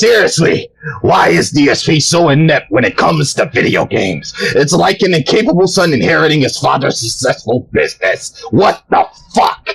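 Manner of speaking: angry, irate read-aloud voice. Reading out Meme Lord's question aloud, in an angry Adon voice. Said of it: "read in my angry Adon voice".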